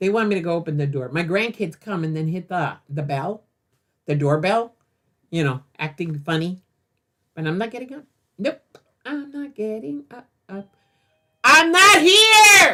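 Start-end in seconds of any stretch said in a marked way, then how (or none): 11.4-12.7 slow, loud, high screaming, stretched out. Grandparent refusing to get up when the grandkids ring the doorbell; screaming. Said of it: "Sorry, I'm screaming".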